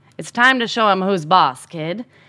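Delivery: ordinary delivery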